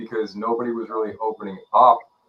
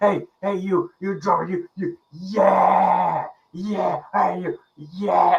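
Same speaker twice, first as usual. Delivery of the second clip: put-on yelling, much higher, slower; 9 semitones higher than usual. Retelling a man spinning on a stool calling to the drummer, imitating a man yelling. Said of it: "just like yelling at us".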